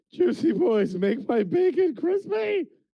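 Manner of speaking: speaking through tears, very high, sobbing. A player voicing his character during a dice game: crying. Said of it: "crying and doing that".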